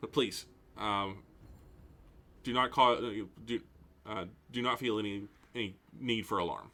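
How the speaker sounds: very calm yet fully commanding voice. The narrator voices a character turning to address the party, calm, commanding voice. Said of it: "very calm, very uh, but but also very commanding voice".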